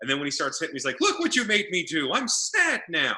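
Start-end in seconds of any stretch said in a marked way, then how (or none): 1.0-3.2 scolding voice, pitched up a bit. Recapping a fight, acting out what one fighter said: Bray as mock scolding parent. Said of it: "like a scolding parent".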